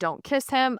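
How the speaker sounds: play-acted high-pitched, threatening, menacing tone. Recounting what she shouted at all the girls, retelling a yell. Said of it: "yelling at all of the girls".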